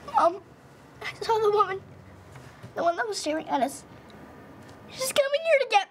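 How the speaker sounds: scared, trembling voice. A daughter comes to her mother, shaking with fear. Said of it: "You're shaking".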